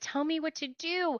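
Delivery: small, soft, high voice. Narrator, surrounded by punks, speaking to Freak in a small voice. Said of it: "In a small voice".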